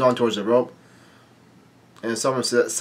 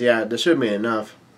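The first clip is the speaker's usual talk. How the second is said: ordinary talk, nothing marked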